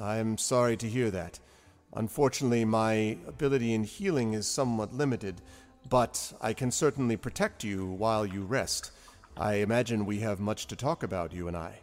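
serious, grave giant voice. Voicing a huge giant who looks down at the party: serious giant voice. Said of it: "He says".

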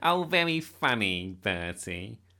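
slow, scornful, sneering delivery. A narrator reads one boy answering another: sneering. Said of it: "sneered Nick".

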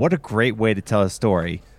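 usual speaking voice

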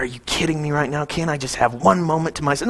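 mumbled, low, quiet mutter. Joking how Jesus might have reacted to crowds: imitating Jesus muttering. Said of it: "he mutters, and he's like".

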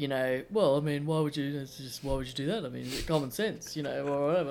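put-on Australian accent. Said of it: "Your impression of Peter Dutton".

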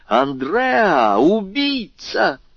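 shrill cry at a very high pitch. A young woman recognizes a frightened man and calls out: shouting. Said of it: "крикнула одна из молодых женщин".

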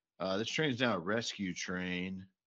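ordinary delivery

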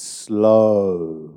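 "slow" emphasized. Telling listeners how this applies to their lives, stressing 'slow'. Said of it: "with the emphasis on slow".

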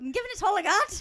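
shrill, booming, bad Scottish accent that slips Irish. Second attempt at the line, in a horrible Scotty accent. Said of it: "No, that's Irish".

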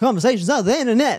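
teasing mock voice. Teasing a host who wants to speak quicker, doing a mocking impression of co-host. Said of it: "that's a great impression of me".

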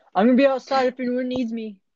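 calling out with a high yell across a room. Telling about a weird guy in a restaurant, imitating him screaming across the room. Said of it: "he was like screaming from across the rest- restaurant".

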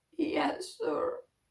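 hushed, trembling, quiet, shaky voice. Retelling a son's reply to his father: imitating a quiet shaky voice. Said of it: "he said very quietly, with a shaky voice".

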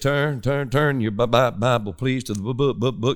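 slow, low, heavy stutter at the start. Retelling how a guest preacher began at the pulpit, imitating a heavy stutter. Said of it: "he stuttered like crazy".

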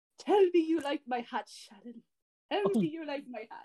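put-on high, loud Irish accent. Retelling a movie scene to the other hosts, doing the Lucky Charms accent. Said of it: "doing the Lucky Charms accent".

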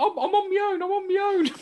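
put-on teary voice. Retelling what he said to someone panicking over him, imitating own teary voice. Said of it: "I sounded very teary".

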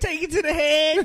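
high, loud mock stoner coaxing voice.

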